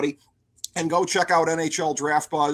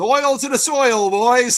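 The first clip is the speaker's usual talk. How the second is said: put-on raised, pitched-up Newfoundland accent; 8 semitones higher, 6 dB louder than usual. Discussing Minnesota's goalie, the speaker quotes a show character in Hitchcock's Newfie accent. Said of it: "good old Hitchcock in his Newfie accent".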